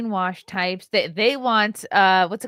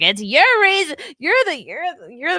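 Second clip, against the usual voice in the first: mock angry woman yelling, high, swooping, tripping over words; 7 semitones higher, 3 dB louder than usual. Speaker retells a woman coming back to yell at them; imitating a woman yelling. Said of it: "she came back to yell at me".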